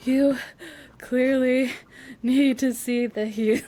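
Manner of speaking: put-on winded, slow, halting words broken by pauses. Retelling a book scene, quoting a character: Violet out of breath, imitated. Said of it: "Violet's out of breath like".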